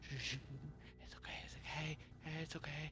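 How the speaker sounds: hushed, urgent whisper. A hidden voice behind the stable doors shushes the horses, urgent whisper. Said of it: "you hear a whispered voice try, trying to shush them".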